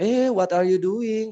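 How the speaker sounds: put-on high, slow English with Indonesian accent. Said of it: "masih bilang".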